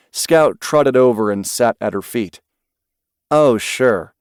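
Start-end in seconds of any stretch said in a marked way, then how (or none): none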